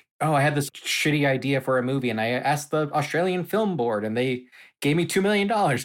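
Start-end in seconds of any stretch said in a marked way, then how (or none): none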